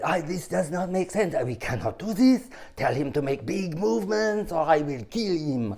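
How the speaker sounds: put-on character voice with a French accent. Retelling what the organist said over the phone: Peter Lorre voice with French accent. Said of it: "Peter Lorre with a French accent".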